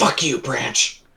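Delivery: whispering angrily. A player in a tabletop game after a branch snaps loudly in the woods, whispering angrily. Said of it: "I whisper angrily".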